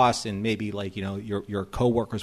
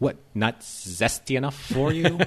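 put-on bone-dry, unapologetic sarcasm; 3 semitones higher than usual. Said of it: "the driest, driest, unapologetic sarcasm".

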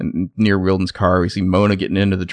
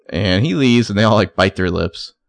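plain

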